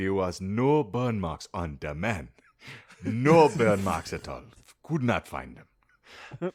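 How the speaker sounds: put-on pirate voice with a South African accent. Right after being told they sound like one, in a mock South African pirate accent. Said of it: "you sounded like a South African pirate".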